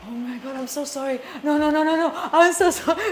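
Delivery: put-on panicked, apologetic tone. Retelling how a drunk friend apologized, imitating someone panicking. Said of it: "He started panicking".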